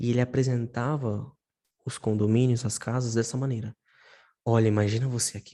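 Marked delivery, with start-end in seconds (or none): 4.4-5.5 sensual, showy, glamorous, sultry sales voice. Imitating a real estate agent showing houses: imitating a glamorous sensual voice. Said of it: "com aquela voz, sabe, glamourosa, toda sensual".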